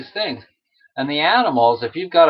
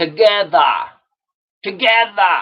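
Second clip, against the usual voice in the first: clumsy put-on rough Northeastern US accent, pitched up; 5 semitones higher than usual. Reaching the last item on their list, the speaker does Bernie: Bernie impression, Northeastern accent. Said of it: "I'm not really good at doing the Northeastern accent".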